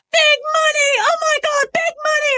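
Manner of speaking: put-on very high, drawn-out, thrilled excited cry. Recounting what they say on finding a penny, acting out excited yelling. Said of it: "And we're like so excited".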